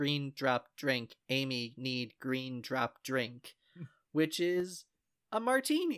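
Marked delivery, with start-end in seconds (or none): 0.0-3.5 put-on robotic synthesizer voice. Describing a favorite plane scene where the gorilla Amy panics, in Amy's robot text-to-speech voice. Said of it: "her little robot text-to-speech voice says".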